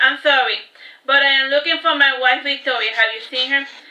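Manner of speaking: ordinary delivery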